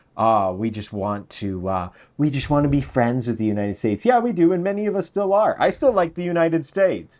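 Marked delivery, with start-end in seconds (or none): 0.2-4.0 put-on silly, dim-witted, dopey voice. Talking about tariffs and trade with the United States, put on a soft, stupid voice. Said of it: "I'll say in my soft, stupid voice".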